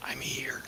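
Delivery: keeping voice down. Answering in character after being let inside: keeping voice down. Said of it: "I'm gonna keep my voice down".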